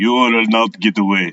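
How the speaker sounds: put-on Russian accent, cartoon villain voice. Trying another voice for the drawn villain: Russian villain voice. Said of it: "Maybe he's Russian".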